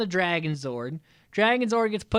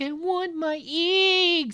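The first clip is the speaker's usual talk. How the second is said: very high, whiny sobbing voice, eggs dragged out; 10 semitones higher than usual. Recapping a Power Rangers episode, speaker voices the fish monster: imitating a crying fish monster. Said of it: "Still crying over the eggs".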